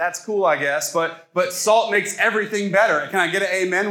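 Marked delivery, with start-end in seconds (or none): none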